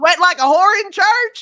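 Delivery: loud, high-pitched put-on American Southern accent. Asked how to say a phrase in a southern accent, trying it in a southern accent. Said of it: "How do we say that in in a southern accent?".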